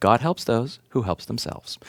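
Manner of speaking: acted, very calm, cool and composed voice. Retelling how his dad answered his mother's dramatic outburst, in a very calm voice. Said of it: "say in a very calm voice".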